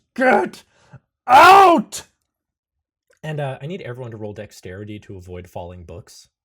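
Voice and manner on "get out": shrill, very high, very loud agonized scream. Voicing a creature thrashing against bookshelves: screaming in agony. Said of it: "he is roaring in, in agony as he screams".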